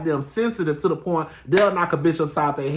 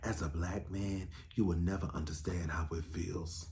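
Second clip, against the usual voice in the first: very quiet, solemn, deep-sounding half-whisper; 12 semitones lower, 17 dB quieter than usual. Retelling how Ralph started half-whispering: imitating Ralph's half-whisper. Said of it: "start this whole whispering like you really saying some shit".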